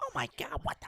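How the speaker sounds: very high, worked up, passionate outburst. Imitating a friend reacting to an accusation: imitating John's high-pitched voice. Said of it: "His voice would have got all high pitched".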